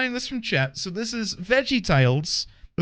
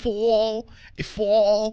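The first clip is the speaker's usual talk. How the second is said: Boston accent, falling tune, stretched vowel. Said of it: "how I learn how to do a Boston accent".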